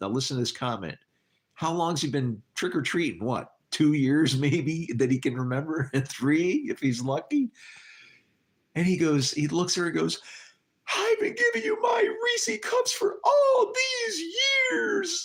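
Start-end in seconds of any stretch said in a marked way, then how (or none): 10.9-15.3 put-on very high, tearful, crying little boy's whine. Speaker retelling what a little boy told her, imitating him in full tears. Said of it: "he goes in full on tears".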